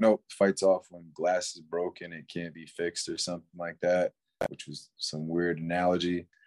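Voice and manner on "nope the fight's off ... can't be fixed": plain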